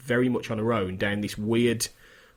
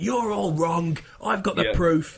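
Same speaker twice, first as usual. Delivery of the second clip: mock shouting, raised and pitched-up; 7 semitones higher than usual. Retelling how Mulder shouts down the new boss: imitating Mulder shouting. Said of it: "Mulder just comes in and just shouts him the fuck down".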